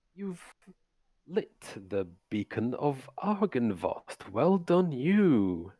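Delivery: smug, patronizing villain-like voice with drawn-out "you". Voicing a villain who spreads his arms at the mansion: condescending villain speech. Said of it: "he looks at you all kind of quite condescendingly".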